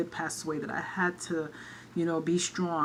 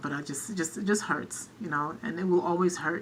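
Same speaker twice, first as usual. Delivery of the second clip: teary, choked-up voice catching on tears. Speaker talking about her mother's death, a little teary-eyed. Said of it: "I'm just getting a little teary-eyed".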